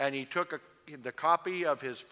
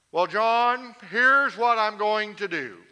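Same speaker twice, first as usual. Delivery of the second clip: big, booming, swooping, animated voice; 6 semitones higher, 8 dB louder than usual. Retelling the bishop's answer to his problem, Bishop Handy's big booming voice. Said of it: "had a big, booming kind of voice".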